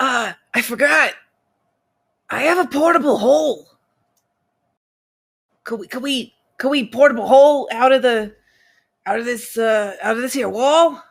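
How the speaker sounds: hushed whisper in a character voice. Playing an excited character pulling out an item: whispering in character. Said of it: "I'm just gonna have to whisper".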